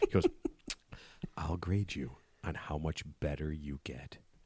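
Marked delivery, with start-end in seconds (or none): 1.4-4.2 low, slow, confidential half-whisper. Quoting what a man half-whispered to him, the speaker retells it as a half-whisper. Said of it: "he whispers this to me".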